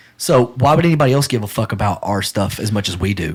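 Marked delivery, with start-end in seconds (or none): none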